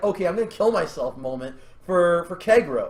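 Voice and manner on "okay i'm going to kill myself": plain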